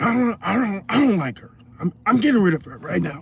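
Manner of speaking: high-pitched slasher horror-villain voice. Retelling what a man said about firing someone: Freddy Krueger voice. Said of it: "He kinda talk like Freddy Krueger too".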